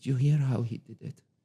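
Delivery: very calm, even, serene, unruffled voice. Retelling what Ali said after watching a sushi chef, imitating Ali's very calm voice. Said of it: "In his very calm voice".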